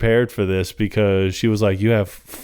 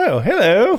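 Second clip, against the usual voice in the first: very high-pitched character voice; 11 semitones higher than usual. Retelling a film scene, imitating Charlie: imitating Charlie. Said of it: "Charlie's reaction because he's just like".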